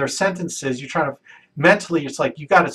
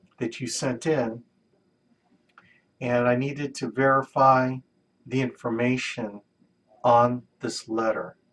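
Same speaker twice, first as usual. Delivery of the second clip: very slow, deliberate, drawn out word by word; 4 semitones lower, 5 dB quieter than usual. Demonstrating a call about verifying a letter, very slow speech. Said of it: "it took everything in my power to talk that slow".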